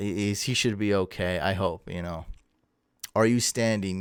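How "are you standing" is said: plain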